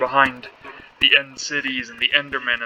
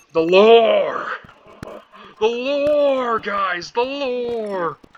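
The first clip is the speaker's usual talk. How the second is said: "lore" dragged out very slowly, pitched up high; 9 semitones higher, 4 dB louder than usual. Commenting on game lore, quoting a catchphrase: Markiplier impression. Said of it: "why I'm saying it like that".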